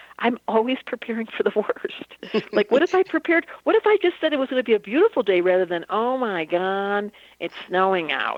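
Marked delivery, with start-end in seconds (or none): 5.9-8.4 mock miserable voice, very slow and drawn-out. Speaker contrasts preparing for the worst, acting out a mock-miserable voice. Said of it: "like in such a miserable voice".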